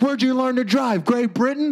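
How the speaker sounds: put-on very high, screaming old man voice. A comedian retells an old man screaming at him: retelling an old man screaming. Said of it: "he's still screaming at me".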